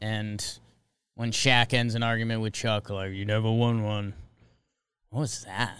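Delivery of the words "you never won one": lower-pitched put-on voice with a Russian accent. Quoting Shaq ending an argument with Chuck: failed Shaq impression. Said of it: "That wasn't even an impression".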